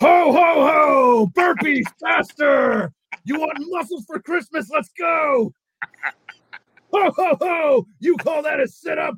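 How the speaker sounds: very high, loud, drawn-out hollering yell. Running a workout in a Santa hat and beard, yelling at everyone; retelling a Santa-style yell. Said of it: "yelling at everyone like".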